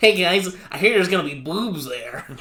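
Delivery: put-on nerdy voice. Imitating how a character sounds in the English dub: Mineta English dub nerd voice. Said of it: "in the English dub, he's, like, kind of, like, just a nerd".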